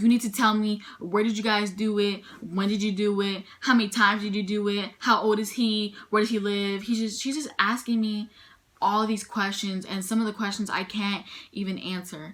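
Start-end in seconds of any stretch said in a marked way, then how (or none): 0.0-6.8 put-on mad, mock-angry voice. Retelling being questioned while crying, imitating someone getting mad. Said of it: "She's sitting there getting mad".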